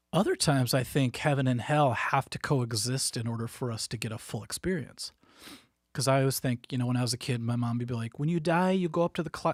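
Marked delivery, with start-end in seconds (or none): 8.2-9.5 put-on Korean accent. A man recalling what his korean mother told him as a kid, imitating mom's korean accent. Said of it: "so I'm doing the Korean voice".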